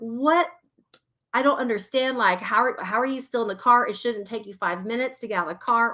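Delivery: mock, exaggerated, super irritated tone. Retelling scolding her child for taking long to get out of the car, retelling irritated scolding. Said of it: "I'm exaggerating because I'm like super irritated".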